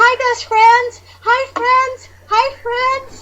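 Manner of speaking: high, loud, drawn-out screaming. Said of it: "So I'm screaming".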